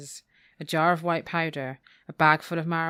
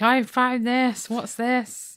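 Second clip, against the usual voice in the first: acted-out, high, drawn-out screaming; 7 semitones higher, 4 dB louder than usual. Recapping a story where a woman confronts a man, imitating someone screaming. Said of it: "she's just screaming at him, like".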